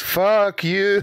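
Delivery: strong bleating goat voice, very high. Pitching a joke idea to the others, very strong goat voice. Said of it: "in a very strong goat voice".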